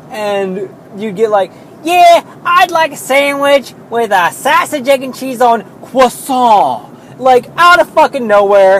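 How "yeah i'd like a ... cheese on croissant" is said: bad, awful fake European accent, pitched up. Mocking a person who learned to say it like a European, awful fake European accent. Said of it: "every other word was fucking grating and like an awful accent".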